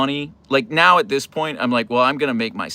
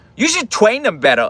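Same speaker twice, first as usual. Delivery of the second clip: put-on little kid voice; 8 semitones higher, 3 dB louder than usual. Retelling what a kid who kept following them said, stereotypical kid voice. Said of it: "stereotypical kid voice".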